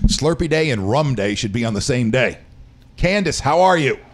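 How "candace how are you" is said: yelling, pitched high. Greeting candace after a weird week, yelling. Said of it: "sorry, I don't know why I'm yelling".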